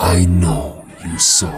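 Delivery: raspy, hissing woman's voice with swooping pitch. Reading a horror story aloud, a voice through the wall: raspy hissing woman's voice. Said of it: "a woman's raspy voice hissing".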